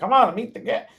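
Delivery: squeaky, very high cartoon bunny voice. Reading a cartoon rabbit's line aloud: cartoon rabbit voice. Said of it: "That's perfect voice".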